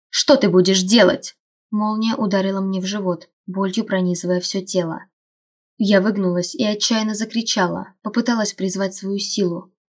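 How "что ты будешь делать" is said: barked harshly, snapping, louder. A man hurling wind and fire at the narrator barks at her harshly. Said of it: "рявкнул он".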